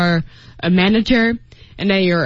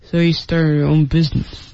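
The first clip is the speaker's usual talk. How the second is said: low, unclear mumble, words slurred together, hard to catch; 4 semitones lower than usual. Explaining the word 'mumble' to learners, acting out a man mumbling. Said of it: "That is to mumble".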